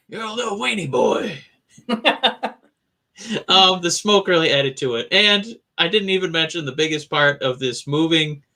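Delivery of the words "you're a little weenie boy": growly, gritty voice like a heavy smoker. Imitating someone's promo insult to another wrestler: growly, gritty voice. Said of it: "growly, gritty voice".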